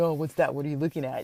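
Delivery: joking, playful, acted-out sarcastic teasing. Retelling how he came over and looked at what the speaker studied: mock-sarcastic teasing. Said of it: "playfully, just like sarcastically".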